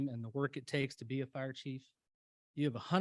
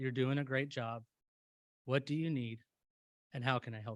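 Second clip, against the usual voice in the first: play-acted, utterly calm, reassuring voice. Speaker retelling what a woman nudging up beside them said, imitating a very calm voice. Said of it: "in the calmest voice ever".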